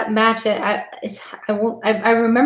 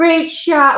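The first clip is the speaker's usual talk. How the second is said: high-pitched, sarcastic, insincere tone; 6 semitones higher, 4 dB louder than usual. Retelling own irritated remark during a match; retelling a sarcastic remark. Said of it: "like being sarcastic".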